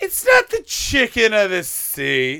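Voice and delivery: put-on loud nasal kid voice, pitch swooping all over. Describing how Jerry Seinfeld always sounds to them, doing a nasal Jerry Seinfeld voice. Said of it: "just this nasally 11-year-old".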